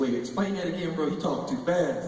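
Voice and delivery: ordinary talk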